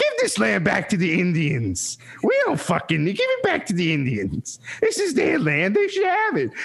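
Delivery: put-on animated Italian accent. Quoting the speaker's mother's words, spoken in an Italian accent. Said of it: "that was an Italian accent".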